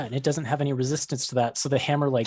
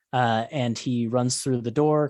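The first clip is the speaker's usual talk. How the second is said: normal talking voice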